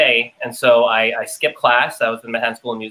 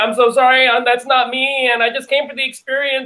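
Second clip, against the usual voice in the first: put-on tearful crying tone, higher; 14 semitones higher than usual. Retelling apologizing to a casting director at an audition: imitating own past crying. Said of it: "I'm, like, crying".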